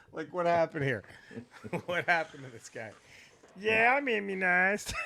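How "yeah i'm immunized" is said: put-on West Virginia hayseed accent, slower. Mocking a guy's sudden new accent to the other speaker: imitating a hayseed accent. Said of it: "sound like a fucking hayseed from West Virginia".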